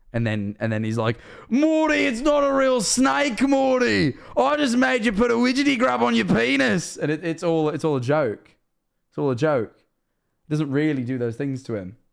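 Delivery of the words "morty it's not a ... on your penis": slow, rough, creaky Australian drawl, very high pitch. Quoting a cartoon scene: Australian Rick voice. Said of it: "where Rick and Morty are Australian".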